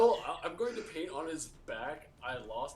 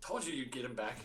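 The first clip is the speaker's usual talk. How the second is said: soft, hushed half-whisper, close and quiet; 2 semitones lower, 6 dB quieter than usual. Sneaking up invisibly on Calypso and speaking in her ear: half-whispering in character. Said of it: "I'll whisper to her".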